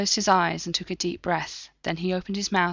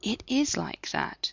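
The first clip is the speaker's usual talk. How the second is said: careful, gentle, reassuring voice, soft and slow; 2 semitones higher, 5 dB quieter than usual. Sitting beside a sulking man on the couch, she answers him in a gentle voice. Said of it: "She was careful to keep her voice gentle".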